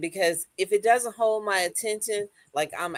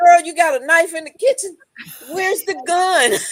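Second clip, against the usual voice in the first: put-on scream, higher and louder; 9 semitones higher, 7 dB louder than usual. Retelling watching murder shows at night: imitating screaming at the TV. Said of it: "I'm screaming at the T V".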